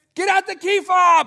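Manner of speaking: very loud, shrill, high-pitched shouting. Retelling coming up the driveway to his wife: imitating himself yelling. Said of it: "I'm yelling".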